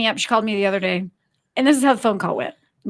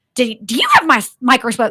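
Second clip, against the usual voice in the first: cross, angry-sounding, stumbling, swooping speech. Retelling a friend's phone call, imitating someone sounding angry. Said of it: "I sounded angry, didn't I?".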